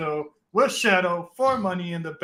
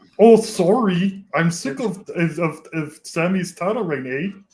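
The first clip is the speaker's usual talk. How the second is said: loud, slow, put-on fake Canadian accent; 6 dB louder than usual. Told to act more Canadian, answering in a mock Canadian accent. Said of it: "if you mock Canadians".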